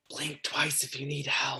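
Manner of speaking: whispering fairly loudly. Retelling what you whispered to Lev and Namori, in a loud whisper. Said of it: "I just whisper kind of loudly".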